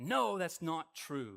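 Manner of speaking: acted angry voice. Speaker acting out how someone fires back when confronted, acting out an angry retort. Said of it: "you get angry".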